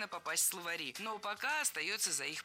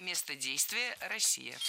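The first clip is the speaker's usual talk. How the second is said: ordinary talk, nothing marked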